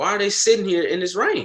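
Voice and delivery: high, amused, incredulous disbelief. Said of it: "I'm like".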